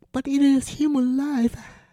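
feeble, weak, very high-pitched voice. The narrator replies to a woman, said weakly. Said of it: "I said weakly".

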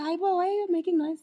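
relaxed, unbothered nurse voice. Retelling labor, the speaker imitates the nurse coming in, imitating her relaxed voice. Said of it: "she comes in so relaxed".

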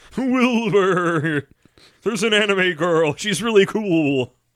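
high horse impression voice. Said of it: "It sounds like Mister Ed".

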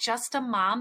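ordinary delivery

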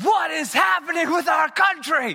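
very high, shrill, screeched outburst, acted out. Telling of facing two strangers on the street, the speaker retells screaming at them. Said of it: "I just screamed at them".

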